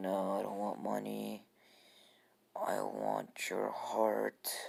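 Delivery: eerie, creepy, very slow and drawn-out voice. Retelling a scene, replying to the other character, in a Gaara impression. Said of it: "Gaara impression".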